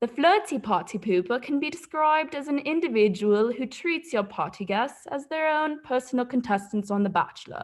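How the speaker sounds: terrible, bad put-on narrator accent. Reading out a pre-roll ad's narration: terrible narrator accent. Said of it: "apologies for my terrible accent".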